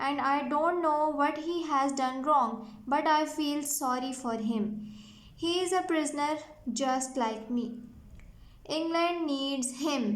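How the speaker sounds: usual speaking voice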